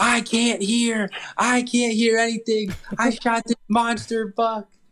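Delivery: mock yelling. Retelling a hunter who just shot a buck with a loud rifle, retelling a yell. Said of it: "he just starts yelling".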